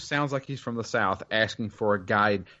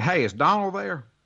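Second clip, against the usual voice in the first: put-on thick Southern accent, heavily laid on, pitched up; 7 semitones higher than usual. Retelling a phone call from a stranger, imitating a strong southern accent. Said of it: "this guy sounds even more Southern than me".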